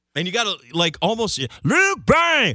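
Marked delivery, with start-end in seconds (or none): 1.7-2.6 very high, loud radio promo announcer yell. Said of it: "Like that's how you got to say it".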